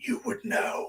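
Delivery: high, soft, creepy ghost whisper. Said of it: "this creepy ass voice like".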